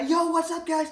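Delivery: super high-energy, pumped-up voice, very high pitch. Telling listeners what you are done doing from here on, do a super high energy YouTuber voice. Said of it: "None of this super high energy YouTuber guy".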